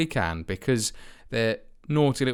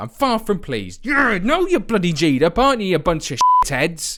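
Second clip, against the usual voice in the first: fed-up, furious, really angry rant; 4 semitones higher, 4 dB louder than usual. Reacting to a football result that hurts their team's title chances, angry. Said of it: "I need to calm down".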